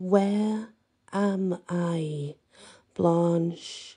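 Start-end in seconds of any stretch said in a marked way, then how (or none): 0.0-2.3 super slow, deliberate, each word drawn way out. Reading a story aloud, repeating a question to a captor: speaking super slowly. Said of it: "I speak super slowly".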